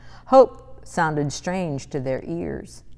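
ordinary delivery

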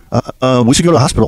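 ordinary talk, nothing marked

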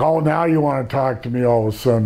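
ordinary delivery

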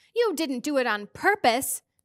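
pressing, insistent, demanding tone. Charles presses Mrs. Watsett for an answer, demanding. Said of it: "Charles demanded".

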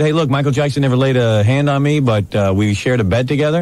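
ordinary delivery

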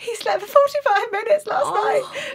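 mock-hysterical voice. Retelling what one mum said in the session circle, imitating a hysterical mum. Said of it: "one mum hysterically went".

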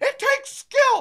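very high, mocking, whiny gamer voice.

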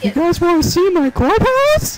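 high cartoon mouse voice. Speaker talking to a group of people does a Mickey Mouse voice. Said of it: "Who's doing a Mickey Mouse voice?".

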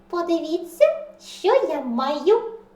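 loudly squeaking. The smallest mouse pulls out a silver bell at the mice's meeting: loud squeak. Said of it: "голосно пропищав малюк".

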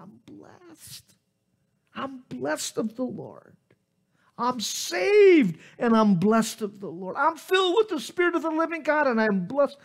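high, overwhelmed screaming, drawn out. Retelling crying out praise at a campsite as tears flowed: retelling screaming. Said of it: "And I just started screaming it".

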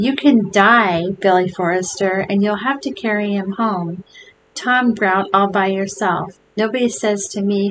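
usual speaking voice

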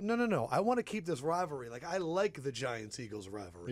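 ordinary talk

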